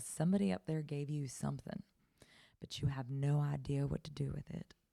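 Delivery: put-on Southern-accented speech. Quoting a woman reading the speaker's story in her office, southern accent. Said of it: "she had this great Southern accent".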